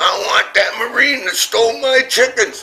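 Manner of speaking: very high-pitched screaming. Retelling how an Army captain came up the beach demanding chickens: imitating a scream. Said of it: "he screamed".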